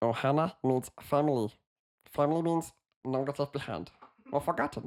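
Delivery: high-pitched alien creature voice, hint of German accent. You offered the others your impression and they said yes; do a Stitch impression. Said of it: "my Stitch impression".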